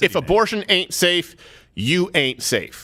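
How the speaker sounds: ordinary delivery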